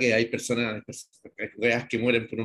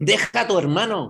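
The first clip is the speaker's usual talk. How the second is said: high, very drawn-out shouted yell; 9 semitones higher, 6 dB louder than usual. Calling out close to another speaker's ear: yelling. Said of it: "¿Por qué me tenés que gritar en la oreja?".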